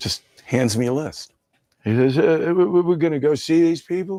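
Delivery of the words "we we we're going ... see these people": high, halting, stammering put-on character voice. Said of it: "he does an impression of [name]".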